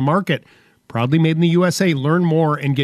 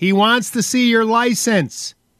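yelled out, pitched up; 6 semitones higher than usual. Morty relays the patrolman's request to his wife Selma: yelling. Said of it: "Morty yelled".

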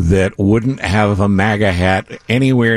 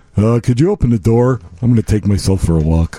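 stock voice for a talking dog. Voicing a dog that takes itself for a walk, generic dog voice. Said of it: "That's my generic dog voice".

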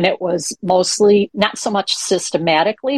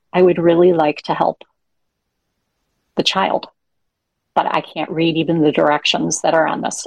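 put-on whispering. Retelling what a grandparent said to a teacher: imitating a whisper. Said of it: "and was whispering".

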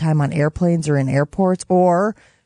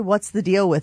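ordinary talk, nothing marked

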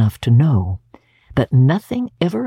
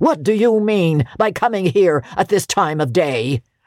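feigned, gruff, habitual-sounding growling manner; 4 semitones higher than usual. Scrooge, feigning his usual voice, confronts Bob for arriving late: Scrooge growling. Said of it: "growled Scrooge in his accustomed voice".

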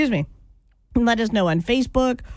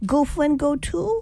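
put-on baby voice, higher; 5 semitones higher than usual. Retelling how a brother's first wife talked to him: imitating a baby voice. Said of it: "my brother's first wife talked to him in a baby voice".

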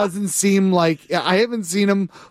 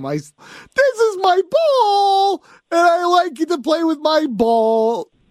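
put-on bear voice, higher and slower; 10 semitones higher than usual. Viewer shows live-stream staff the voice they do for a bear: bear voice impression. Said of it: "I do voices when I see them".

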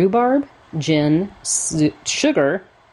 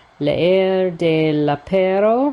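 French words spoken in a put-on Spanish accent; 3 semitones higher than usual. Reading a french phrase aloud from the book's list: spanish accent. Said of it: "I'm doing it with a Spanish accent".

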